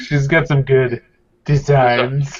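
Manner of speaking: mock, put-on creepy voice. Teasing Kevin by repeating how he said something earlier, mock-creepy Kevin imitation. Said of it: "Because you were like".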